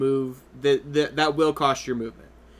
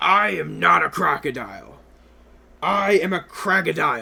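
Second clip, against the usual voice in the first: growled, growling crocodile creature monster voice; 4 semitones higher, 4 dB louder than usual. Voicing a crocodile creature in a tabletop game, growling crocodile creature voice. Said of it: "the creature's gonna like growl and goes".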